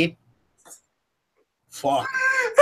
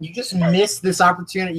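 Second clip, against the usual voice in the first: ordinary delivery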